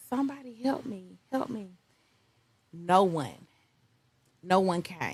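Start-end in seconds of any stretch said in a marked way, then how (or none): 0.0-1.8 high calling-out voice. Retelling calling out for help while at the rail: retelling her own cries for help. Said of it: "I said".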